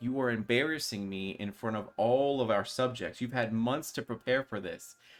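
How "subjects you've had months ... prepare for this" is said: normal talking voice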